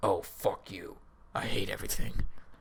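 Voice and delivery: very quiet, hushed, demonic muttering. Recounting a bad trip, hearing his own voice in his head, demonic voice. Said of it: "in like a demonic voice".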